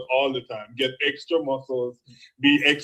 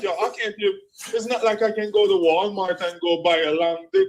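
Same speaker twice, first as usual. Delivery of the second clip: acted weepy, tearful, high crying voice; 6 semitones higher than usual. Reminding the other speaker of the morning they were up here crying, imitating someone crying. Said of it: "you're up here crying like".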